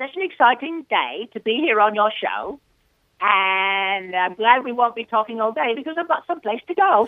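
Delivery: high cartoon character voice, drawn-out "and". Asked by the host to start with Pinky, doing the Pinky voice. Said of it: "Why don't we start with Pinky?".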